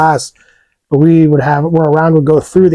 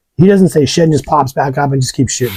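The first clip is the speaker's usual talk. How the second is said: plain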